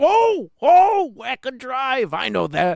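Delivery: very high, loud, drawn-out exclamation. Recognizing a film location while watching a movie, react in your Al Pacino voice. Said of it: "[name] does his Al Pacino voice whenever he recognizes a film location".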